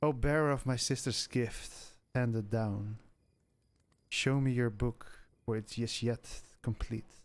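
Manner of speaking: deep, heavy, low, weighty feminine voice. She turns toward Arthur and speaks to him in a deep, heavy feminine voice. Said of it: "feminine, but very deep and heavy still".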